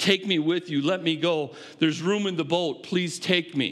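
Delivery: desperate, pleading, begging voice. Retelling a man pleading with Jesus to take him along, acting out desperate begging. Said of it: "He begs".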